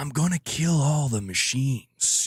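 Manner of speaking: slow, drawn-out, stretched delivery leaning into cadence. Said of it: "it has, like, this cadence to it".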